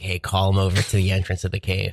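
plain

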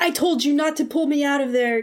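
furious, pissed-off, angry yelling. Recounting a scene where one character yells at another: retelling a yell. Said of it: "Kratos is yelling at Atreus".

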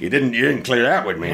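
plain

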